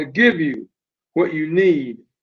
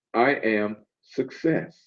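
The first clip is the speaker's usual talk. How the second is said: quiet, soft voice with commanding weight; 6 semitones lower, 8 dB quieter than usual. Retelling what he said in reply to the speaker, in a soft, powerful voice. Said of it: "With that soft, powerful voice said".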